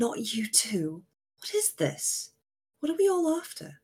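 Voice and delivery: carrying stage whisper. Voicing a character who spots companions sneaking behind him: loud hoarse whisper. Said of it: "loud whisper".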